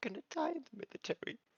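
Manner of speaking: very high, whimpering puppy-dog voice. Voicing a frightened character answering a question: whimpering voice. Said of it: "a whimpering voice of".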